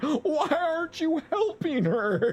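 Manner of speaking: put-on very high, drawn-out panicked crying. Retelling a young brother's reaction to an aunt's fall: imitating panicked crying. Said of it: "He panicked and was crying like".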